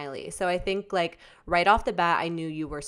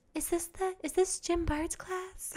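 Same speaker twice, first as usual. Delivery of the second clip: put-on tiny childlike voice, much higher, quieter; 11 semitones higher, 8 dB quieter than usual. Recalling the listener as a small kid asking about a class, in a small childlike voice. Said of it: "a little voice being like".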